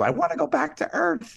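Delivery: very high, scratchy, rough shout. Parent retelling what his son yelled during a spaceship ride, retelling a yell. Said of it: "he just yells".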